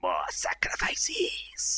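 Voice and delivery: hissing, slow snake-like whisper.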